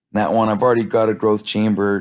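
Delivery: plain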